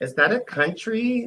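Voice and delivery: high, slow, incredulous and clueless voice.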